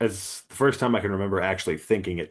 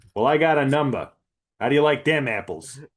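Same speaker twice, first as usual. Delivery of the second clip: very bad put-on Boston accent; 6 semitones higher, 4 dB louder than usual. Quoting a movie line to the others, in a very bad boston accent. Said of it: "I'm doing a very bad Boston accent".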